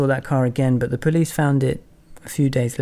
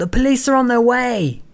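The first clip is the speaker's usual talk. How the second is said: put-on, very high-pitched, shrill shouting; 11 semitones higher, 4 dB louder than usual. Recounting shouting at people taking your car, retelling a shout. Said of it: "I just shouted".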